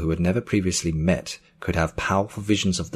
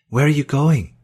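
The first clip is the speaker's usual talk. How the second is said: startled, worried, alarmed, high and raised voice; 9 semitones higher, 6 dB louder than usual. A woman asks Joel as he pushes past her toward the door, alarmed.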